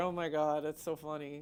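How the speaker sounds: soft, giggling, laughing through words. Pointing out someone to the people watching, laughing while talking. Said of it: "I don't know why that's making me laugh".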